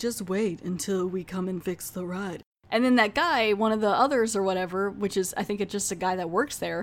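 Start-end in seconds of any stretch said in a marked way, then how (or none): 0.0-2.4 eerie, spooky, creepy voice. Retelling what a voice said when a ride broke down: creepy voice. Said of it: "this creepy voice is like".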